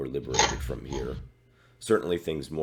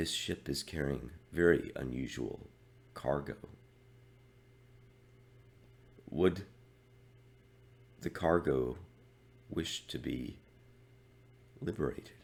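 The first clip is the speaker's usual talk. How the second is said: very quiet, getting quieter; 5 dB quieter than usual. In a role-play, an unknown voice speaks through a door slit at night: very quiet voice. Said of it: "You were trying to talk very quietly".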